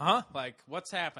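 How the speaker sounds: ordinary talk, nothing marked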